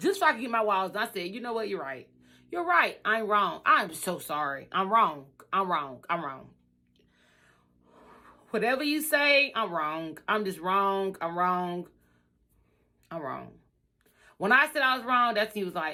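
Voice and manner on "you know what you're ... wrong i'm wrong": mock calm, cool, played-cool tone. Retelling giving in to a contractor to get walls done: retelling a put-on calm apology. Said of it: "I just calmly, like, kinda played cool".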